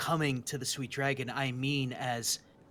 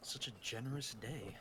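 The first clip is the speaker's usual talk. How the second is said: muttered character voice, much quieter; 3 semitones lower, 14 dB quieter than usual. Handed a scroll as a gift, Greckles answers; Greckles muttering under breath. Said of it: "Greckles mutters under his breath".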